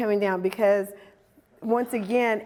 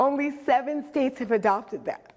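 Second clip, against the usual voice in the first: choked-up voice, breaking with emotion; 3 semitones higher than usual. Telling an audience about the Crown Act, choked up. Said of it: "I get choked up".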